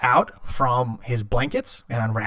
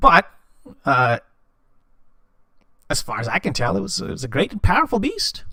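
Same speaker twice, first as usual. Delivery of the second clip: put-on kobold character voice, halting delivery; 4 semitones higher than usual. Speaking in character as a kobold to the players, in a kobold character voice. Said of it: "So he's a kobold. / So he's a kobold. He has a staff and what appears to be something glowing and flittering inside the staff. And he's got this tattered robe that he's wearing. It looks to be very fi".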